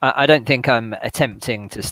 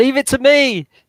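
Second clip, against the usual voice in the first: high, loud, heroic rallying shout. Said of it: "I try and shout to the prisoners".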